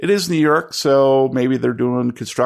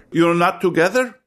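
put-on muffled Eastern European accent, much higher pitch; 6 semitones higher than usual. Questioning guests who ask for two rooms, in a muffled eastern european accent. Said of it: "calls a muffled eastern european voice".

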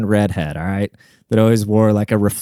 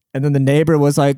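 ordinary talk, nothing marked

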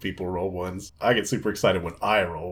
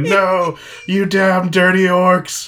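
high, loud screaming. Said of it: "fell to his knees screaming".

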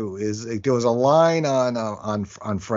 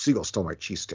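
play-acted, aggrieved, fuming grumble, half whispered; 4 semitones lower, 7 dB quieter than usual. Asked how the beach was, retelling Dylan's answer, imitating Dylan being pissed. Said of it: "He was pissed".

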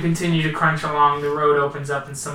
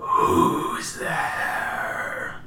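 angry, spectral ghost voice. Narrating a scene, voicing something calling out from the ranger station: angry ghost voice. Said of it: "I don't know how much of that was ghost voice and how much of that was angry voice".

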